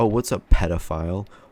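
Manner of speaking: ordinary delivery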